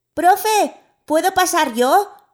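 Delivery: loud, high, eager shout. Narrator reads another pupil's call to the teacher in class, shouting. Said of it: "Yari gritó".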